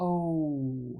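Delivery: oh glided very slowly with a shifting vowel. Pronunciation lesson on a gliding vowel sound: drawn-out 'oh' vowel. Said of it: "if I slow it down a lot, listen".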